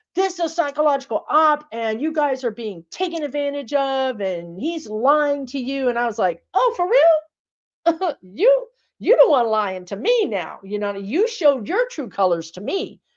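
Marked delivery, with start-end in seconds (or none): 0.2-5.9 forceful, heated, emphatic, accusing put-on rant. Retell what a man said to the camera with his whole chest, imitating someone screaming at the camera. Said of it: "this man is screaming at the camera".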